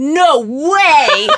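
high voice with the word "way" drawn way out. Recalling a celebrity encounter, doing the reaction in an Ashton Kutcher voice. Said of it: "in the most Ashton Kutcher voice in the entire world".

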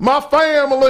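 mock American Southern accent.

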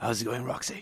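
very low, soft, hushed deep bass voice. Greeting the other speaker at the table: deep voice. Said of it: "I love that deep voice".

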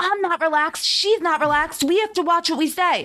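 high, loud yelled protest. Recounting a man yelling at a producer, retelling a yell. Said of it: "when Tom yelled to the producer".

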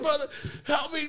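high, screaming voice, sobbing. Retelling how the younger brother called for help, imitating him screaming and crying. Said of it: "he's just screaming and crying".

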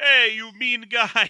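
bad, horrible, put-on Russian accent. Recapping a scene, voicing the russian whose car gets commandeered, horrible russian accent. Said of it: "That's a horrible accent".

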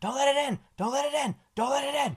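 acted, frantic, very high terrified screaming. Speaker recounts a boy hiding under his bed, retelling a scream in fear. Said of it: "he starts screaming".

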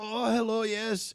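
high-pitched put-on German accent. Describing a type of German, the speaker imitates a tour manager's German accent. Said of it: "the type of German that your tour manager".

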